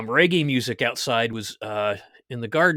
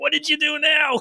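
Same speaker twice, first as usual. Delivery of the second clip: very high, loud yell. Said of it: "she's yelling back".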